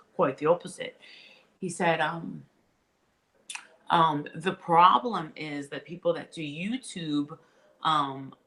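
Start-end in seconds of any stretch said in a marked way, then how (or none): 0.2-1.0 put-on British-accented voice. Retelling what a man answered about working with YouTube influencers: British accent. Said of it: "He's got a British accent".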